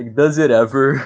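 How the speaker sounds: words broken up by laughter. Asking the others a question, laughing while talking. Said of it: "you're trying to speak and you're laughing".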